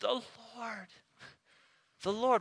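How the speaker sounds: great tenderness, with lifted pitch. A speaker on Scripture demonstrating one way the repeated name was said, with great tenderness. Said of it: "said with great tenderness".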